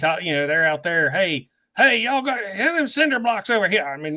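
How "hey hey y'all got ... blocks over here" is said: put-on high-pitched West Virginia accent. Imitating the construction crew next door: imitating West Virginia construction workers. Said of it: "there's guys that talk just like this".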